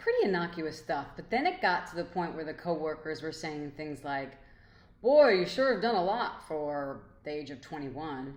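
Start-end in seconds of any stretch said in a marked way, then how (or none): 5.0-8.4 put-on snide, barbed, judgmental disapproving tone. Quoting coworkers teasing her about her age, mock-judgmental tone. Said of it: "I say that with that voice purposely ... It was a little judgmental in the energy".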